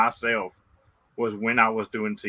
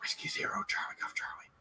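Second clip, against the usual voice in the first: whispered close to the mic. Retelling a radio contact made over the mic: imitating own whisper. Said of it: "I whispered in the mic like I always do".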